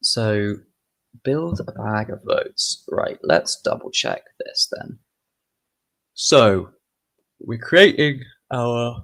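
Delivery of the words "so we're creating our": talking through a yawn, louder and slower. Speaker explaining code to viewers, yawning mid-sentence. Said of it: "excuse me, yawning away".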